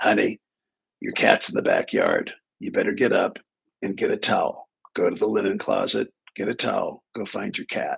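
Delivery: rough, gravelly, crass bourbon-and-cigarettes rasp. Retelling what the speaker's mom called out one morning, mom's gravelly voice. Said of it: "in her gravelly voice".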